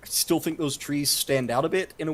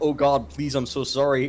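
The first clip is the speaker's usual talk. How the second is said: normal talking voice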